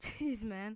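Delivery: ordinary delivery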